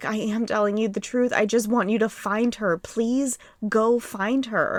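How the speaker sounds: mock crying, tearful pleading tone. Retelling a suspect's plea to officers in an interview room, imitating someone crying. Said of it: "he's literally crying".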